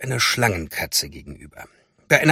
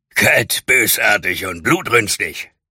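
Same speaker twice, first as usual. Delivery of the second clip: put-on low, wheezing, panting demon voice, short of breath; 4 semitones lower than usual. Narrator reading the demon's words to the storyteller, in a wheezing demon voice. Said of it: "ergänzte der Dämon mit keuchender Stimme".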